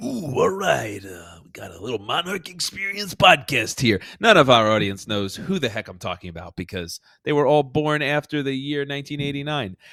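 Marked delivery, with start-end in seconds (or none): 0.0-4.0 rough, creaky, croaked-out voice. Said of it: "I sounded like a Macho Man Randy Savage".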